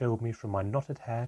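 plain reading voice

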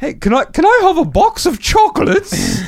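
child's very high, sing-song put-on British accent. Parent imitates their four-year-old asking for chocolates, imitating child's British accent. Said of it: "she started developing a British accent".

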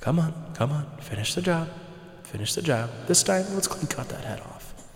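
urgent, goading whispered voice. Voicing the voice in a player's head urging an attack: voice in your head. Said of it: "You hear in the voice in your head say".

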